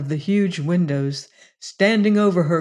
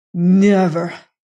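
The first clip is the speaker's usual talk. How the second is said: hissed, louder; 5 dB louder than usual. A man answers the woman who says she gives up, hissed. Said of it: "hissed Lassiter".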